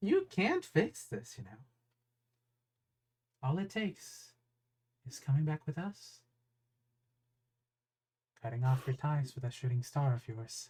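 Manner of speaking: villain-style taunting voice broken by laughter. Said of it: "and he just laughs at that".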